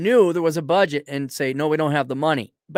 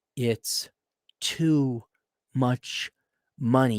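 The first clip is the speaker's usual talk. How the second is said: soft, very slow, exhausted, defeated tone; 4 semitones lower, 5 dB quieter than usual. The speaker retells a husband's reaction to an overpriced home: imitating defeated, exhausted husband. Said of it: "hear the defeatism and the exhaustion in his voice".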